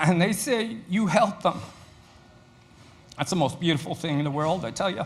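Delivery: tearful, weeping through the words. Speaker describing a student they helped, crying while speaking. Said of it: "I'm crying because it is".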